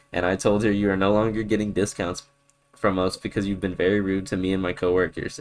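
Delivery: ordinary talk, nothing marked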